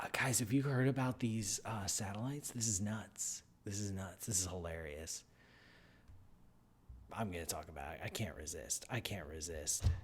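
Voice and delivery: low, hushed conspiratorial whisper.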